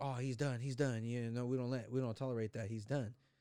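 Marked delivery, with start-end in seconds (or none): none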